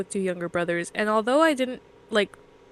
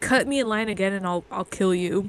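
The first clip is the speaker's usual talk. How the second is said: put-on menacing kid voice. Describing a character raised by assassins, doing a Damien impression. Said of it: "speaks in a way where he's like".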